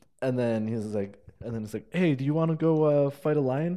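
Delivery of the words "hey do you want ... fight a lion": imitated mopey down delivery, higher. Retelling a comedian's joke delivery with back to audience: imitating mopey down delivery. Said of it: "talking like this".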